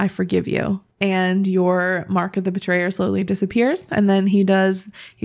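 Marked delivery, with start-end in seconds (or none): 0.0-0.8 soft whisper, close into the ear. Voicing a character forgiving a player up close: whispering. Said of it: "leans in and whispers into your ear".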